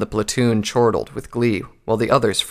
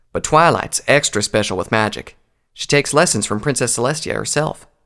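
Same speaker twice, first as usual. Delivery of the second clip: usual speaking voice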